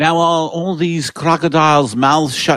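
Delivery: bad British film-star voice, very slow, high and loud. Doing a horrible Roger Moore impression about crocodiles' mouths shut. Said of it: "That's my Roger Moore horrible".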